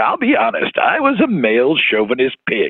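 laid-on, exaggerated genial uncle voice, swooping and sing-song. Imitating an old anchor speaking in an interview: hyper-avuncular Mort Krim voice. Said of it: "in this incredibly hyper-avuncular voice saying".

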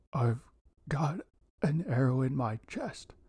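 breathless, gasping delivery. Injured Nicholas answers Nick's question; gasped. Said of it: "nicholas gasped".

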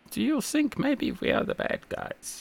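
very high, clumsy put-on German accent. Speaker quoting a line from a TV programme, very bad German accent. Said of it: "I'm sorry about my very bad German accent there".

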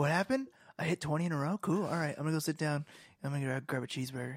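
so-so put-on voice, unbothered, barely noticing. Doing an impression of Klay Thompson after hitting twenty shots: Klay Thompson impression. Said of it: "That's my Klay Thompson impression".

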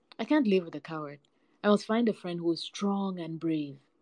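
ordinary delivery

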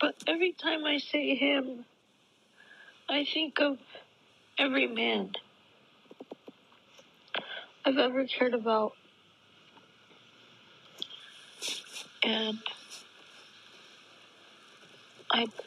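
tearful, crying while speaking. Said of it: "I can't even say it without crying".

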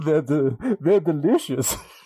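imitated cartoon vampire voice. Saying goodbye on the show: Count Chocula voice. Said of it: "I sound like Count Chocula".

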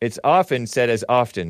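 ordinary delivery

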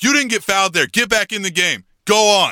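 dismissive, yelling, scolding tone. Recounting a kids' game, the speaker quotes the referee at a player: retelling a referee's yell. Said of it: "he starts yelling at this kid".

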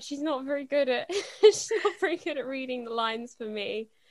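laughing through the words.

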